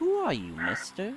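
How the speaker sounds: put-on small, soft, high childlike voice. Narrating a voice in the air that speaks to the player: childlike voice. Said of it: "a childlike voice in the air speak".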